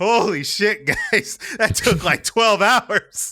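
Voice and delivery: high, loud, stressed-out exclaiming tone. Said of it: "The tone in Dill's voice after looking up the babe skirt".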